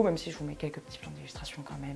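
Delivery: soft, fast whispered aside.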